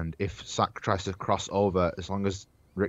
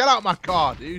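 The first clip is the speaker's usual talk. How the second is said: put-on shout, higher and louder; 11 semitones higher, 5 dB louder than usual. Imitating another speaker shouting at someone: imitating someone shouting. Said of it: "start shouting at me".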